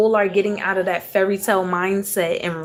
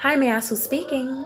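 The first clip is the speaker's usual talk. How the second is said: quick, polite, pitched-up, put-on professional phone voice; 5 semitones higher, 4 dB quieter than usual. Demonstrating the professional voice we all have: professional voice. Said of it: "This is my professional voice".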